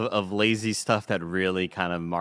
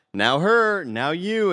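funny animated voice, very high, slow and goofy; 9 semitones higher, 3 dB louder than usual. Retelling a scene of commanding people in a helicopter to be shot: imitating Momoa's funny animated delivery. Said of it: "he's doing it in a very, like, kind of funny, animated way".

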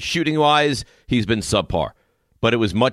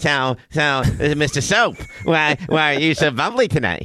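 slow, teasing, mocking put-on voice; 4 semitones higher than usual. Imitating the other speaker talking to soap in the shower: mocking impression of the other speaker. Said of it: "Raymond's impression sounds the same as mine".

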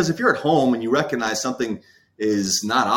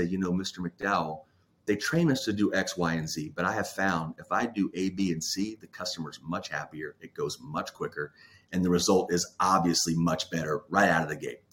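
quiet, soft, hushed, confiding almost-half-whisper; 5 semitones lower, 8 dB quieter than usual. Retelling what a frontline rep told the boss: imitating a rep almost half-whispering. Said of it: "lean over very quietly and almost whisper".

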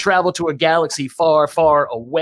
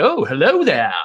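friendly, welcoming, warm tone. Showing a fellow host how his Obi-Wan should sound: friendly Obi-Wan impression. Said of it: "You got to get friendly with it".

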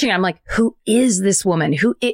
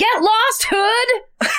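very high-pitched delivery; 12 semitones higher than usual. Retelling a favorite movie line: imitating Cherry from The Outsiders. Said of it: "And that's how she says it".

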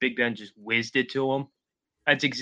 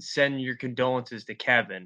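usual speaking voice

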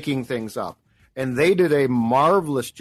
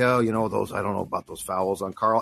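put-on mutter, much lower in pitch; 5 semitones lower, 4 dB quieter than usual. Retelling what Chris Finch said about Carl, muttering like Chris Finch. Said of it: "said it under his breath".

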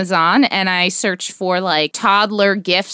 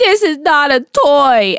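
mock full-blown crying, high and loud sobbing wail; 7 semitones higher, 5 dB louder than usual. Retelling a child throwing a fit, imitating a child crying. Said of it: "like full blown crying".

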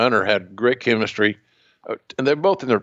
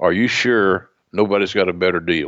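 stern tone, pitched lower; 3 semitones lower than usual. Retelling how the other man looked him in the eye: imitating a stern question. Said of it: "he very stern".

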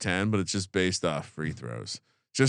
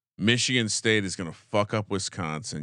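ordinary delivery

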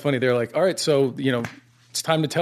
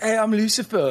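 put-on pitched-up English accent; 7 semitones higher than usual. Describing a character who introduces himself: Lucifer voice. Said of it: "Is that how he talks?".

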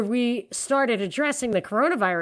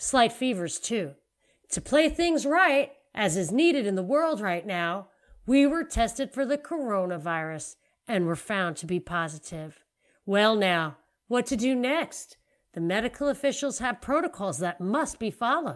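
put-on folksy Southern accent; 3 dB quieter than usual. Reading out Tom Hanks' announcement in an Andy Griffith accent. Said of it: "I don't remember what Andy Griffith's accent is".

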